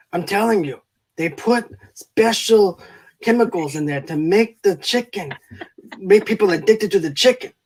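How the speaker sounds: put-on failed Scottish accent that slips into sounding Mexican. Quoting a son watching football on the couch, in a failed scottish accent. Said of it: "I sound like a Mexican rather than Scottish".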